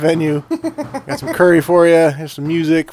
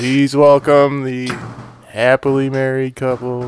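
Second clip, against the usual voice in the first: monotone, depressed MC voice, much lower pitch; 3 semitones lower than usual. Suggesting a wedding bit, the speaker demonstrates a monotone depressed MC voice. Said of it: "monotone voice".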